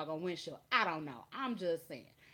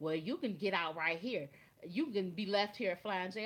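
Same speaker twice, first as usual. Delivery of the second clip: ordinary delivery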